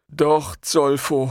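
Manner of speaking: meek, subdued, timid tone. The giant answers the smaller man who scolded him: meekly. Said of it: "erwiderte der Riese kleinlaut".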